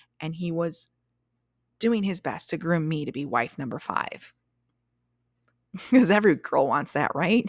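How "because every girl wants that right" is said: loud, dripping with sarcasm. Talking about a man who wanted her as his next wife, sarcastic. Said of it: "That's complete sarcasm".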